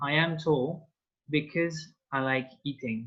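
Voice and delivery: ordinary delivery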